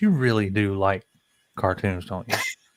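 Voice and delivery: play-acted, very serious, grave and earnest tone. The speaker quotes the girlfriend who laughs at them, mock-serious voice. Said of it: "she looks at me with this very serious voice".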